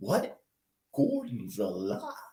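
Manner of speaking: very low, deep, soft, hushed voice with a swoop. Showing another speaker how the film line was said: Max von Sydow Gordon's alive line. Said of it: "He's like".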